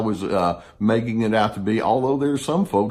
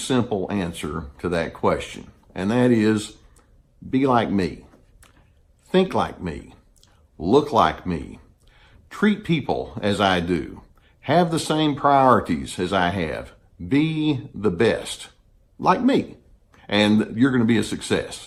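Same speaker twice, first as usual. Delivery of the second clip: plain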